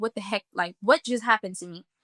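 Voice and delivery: crying, tearful, bewildered, distressed voice. Retelling being on the floor after taking something, imitating own distressed crying. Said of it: "And I'm crying and I'm like".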